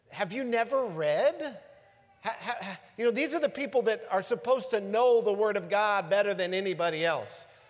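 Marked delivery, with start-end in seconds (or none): 0.1-1.3 mocking, dry tone with biting sarcasm. Retelling a rebuke to the chief priests: imitating a sarcastic retort. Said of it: "Jesus sarcastically says to them".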